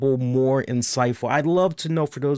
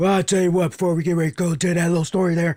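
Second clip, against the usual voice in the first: raspy, rasped-out wrestler character voice; 5 semitones higher than usual. Recalling a documentary moment, doing a Stone Cold impression. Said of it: "my Stone Cold impression".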